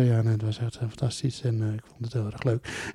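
very soft, quiet talk.

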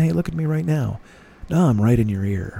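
close, intimate talking, right in the ear. Showing how a professional uses the voice to draw listeners in, close intimate talking. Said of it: "talking like this and bringing you as close".

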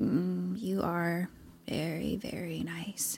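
hushed, very soft, slow, drawn-out half-asleep murmur. Retelling a story, voicing someone falling asleep on a lap: imitating someone falling asleep. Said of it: "kind of falling asleep on her lap".

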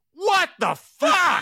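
put-on very high, very loud, shrill sudden yell. Retelling what he said while she was screaming, retelling saying it very loudly. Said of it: "I just very loudly said".

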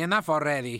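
normal talking voice

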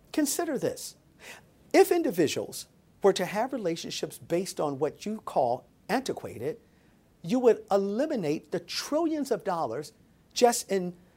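ordinary talk, nothing marked

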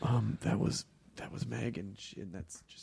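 hushed, discreet whisper.

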